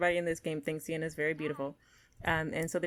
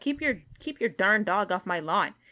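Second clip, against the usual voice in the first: acted-out, furious, angry yell; 2 semitones higher, 5 dB louder than usual. Voicing a neighbor who comes by yelling about a dog: voicing a neighbor yelling. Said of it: "starts yelling at this guy".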